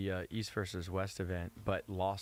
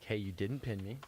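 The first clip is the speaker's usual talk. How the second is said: plain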